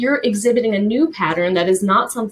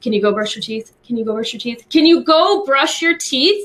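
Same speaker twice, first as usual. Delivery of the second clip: acted-out yelling; 4 semitones higher than usual. Speaker acts out asking someone the same thing fifteen times, retelling a yell. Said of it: "Who wouldn't yell?".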